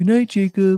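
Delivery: acted animal voice. Retelling saying good night while packing up: put-on Wilbur voice. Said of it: "And I'd made the voice of".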